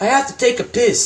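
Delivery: imitated thick Jamaican accent. Retelling a dressing-room story, quoting one man in a thick Jamaican accent. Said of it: "in a thick Jamaican accent".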